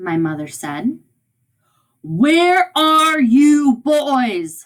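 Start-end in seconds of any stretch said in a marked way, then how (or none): 2.0-4.7 put-on booming, very slow, high voice, boys stretched. Storyteller voices a father calling for his boys: booming voice. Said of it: "My father's voice was booming".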